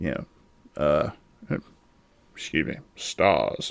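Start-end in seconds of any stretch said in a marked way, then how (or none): 2.3-3.7 suave, breathy, purring whisper. Imitating Nemesis saying his famous word: suave Nemesis voice. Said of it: "I don't think he sounded quite that suave".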